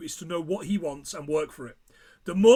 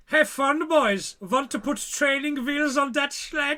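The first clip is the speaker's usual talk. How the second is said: put-on German accent on English, pitched up; 7 semitones higher than usual. Speaker retelling what was said to the lads before their first sled run, in a German accent. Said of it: "I can do this accent".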